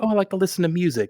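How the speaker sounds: put-on gentle, calm, sweet, slightly high old man voice. Retelling what an old instructor said: imitating an old man's calm, sweet voice. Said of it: "He had a really calm, sweet voice".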